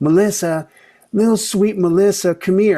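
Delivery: imitated Southern accent. Retelling a mother calling out in a grocery store: southern accent. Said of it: "a mother with a Southern accent going".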